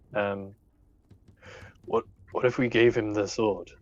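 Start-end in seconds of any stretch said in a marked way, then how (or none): 1.8-3.6 whispering in hushed tones. Player character huddling the group close to suggest a plan, hushed whisper. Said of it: "in as hushed a voice as he can".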